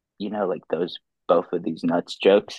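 put-on mutter under the breath. Retelling what a friend said so no one could hear, muttering under breath. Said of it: "he just under his breath".

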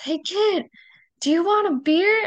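mock hollered shout, very high. Telling a story about their grandpa calling to a kid on a bike, retelling grandpa's shout. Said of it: "and he shouts".

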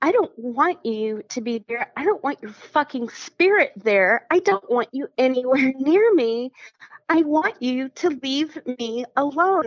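acted-out tearful crying outburst, shaking voice. Retelling what they told a man who offered to be there in spirit: retelling a tearful outburst. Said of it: "I'm crying and I'm standing up and I'm shaking".

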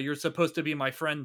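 plain

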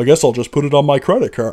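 put-on American accent. Imitating an actor pretending to be American: imitating an American accent. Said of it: "pretending to be an American".

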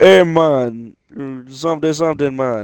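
put-on Jamaican accent. Saying they love Jamaican people and their accents, then imitating a Jamaican accent. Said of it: "I love their people, their accents. It's like".

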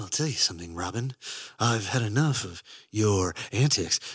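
breathy heroic character voice. Talking about that voice, then doing a breathy Batman voice. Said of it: "kind of a breathy Batman voice".

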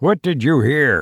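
snarled, demanding tone. A man questions a puzzled man about what he heard, snarled. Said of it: "The question was fairly snarled".

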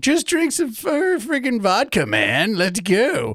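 put-on very high, swooping, sing-song nineteen-year-old dude voice. Imitating his nineteen-year-old self urging others to drink: young [name] voice. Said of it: "That's my young [name] voice".

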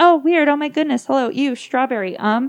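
acted bubbly, gushing chatter. Retelling a strange video where someone suddenly gets all bubbly: imitating a bubbly outburst. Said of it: "she gets all bubbly and all of a sudden starts saying".

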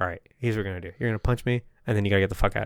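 acted whisper. Retelling a story, acting out one man whispering a plan to another, retelling a whisper. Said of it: "he's like whispering to him".

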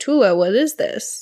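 plain

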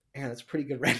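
put-on serious tone. Retelling what a friend said when walking past a render: imitating a friend, mock serious. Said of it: "in all seriousness".

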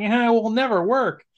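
high, whiny, griping heckler voice. Quoting a character who doubts the plan: whiny heckler voice as Huffer. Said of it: "he has that whiny, um, heckler voice".

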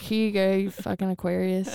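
usual speaking voice

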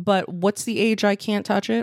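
ordinary delivery

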